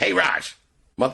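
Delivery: very high, creaky, rough voice. Retelling how Joe answers a phone call: imitating Joe. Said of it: "your Joe Super. impression".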